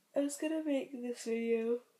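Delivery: speech broken by yawns. A vlogger filming in the rain talks to viewers, yawning while talking. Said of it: "I'm yawning a lot".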